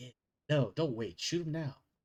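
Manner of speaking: hushed, quiet, low-key delivery without urgency. Voicing Winston quietly urging the others not to wait: Winston speaking quietly. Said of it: "you hear Winston just quietly".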